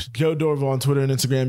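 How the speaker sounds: really fast, rattled-off speech. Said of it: "'cause I'm talking really fast".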